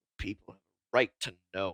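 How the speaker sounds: very low, hushed muttering under the breath. Narrator voices Scoops producing his notes, Scoops muttering under his breath. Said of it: "says again under his breath".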